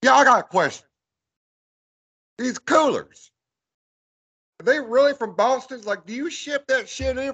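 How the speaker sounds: put-on very high, strong Southern accent, announcer voice. Retelling questioning staff handing out Boston coolers, in a hillbilly announcer voice. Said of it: "I did the whole thing in my my hillbilly announcer voice".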